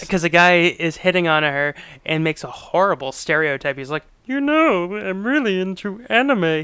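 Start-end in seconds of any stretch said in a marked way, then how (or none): 4.3-6.6 little cartoon spaceman voice. Retelling a guy's line from a film scene, in a Marvin the Martian voice. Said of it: "He says it like he's like Marvin the Martian".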